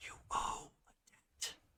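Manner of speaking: slow, very soft, hushed, barely voiced whisper. Voicing the figure on the throne speaking to a player: whisper. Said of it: "it's always in a whisper".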